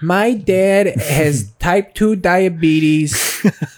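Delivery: put-on Chicago accent. Doing a joking bit as a chicago football fan: chicago accent. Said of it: "that's a good Chicago accent".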